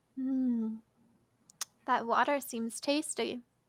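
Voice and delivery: gentle soft woman's voice. Narrating a voice only one player hears in their head: soft, gentle feminine voice. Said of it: "soft, um, like the gentle caress of nighttime".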